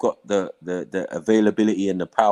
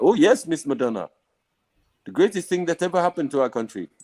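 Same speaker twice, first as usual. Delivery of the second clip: put-on Indian accent, pitched up; 7 semitones higher than usual. Voicing the African government's reply about the adopted kid, put-on Indian accent. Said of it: "Why are you doing an Indian accent".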